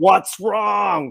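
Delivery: high-pitched mock scream, squealed. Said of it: "the screaming voice".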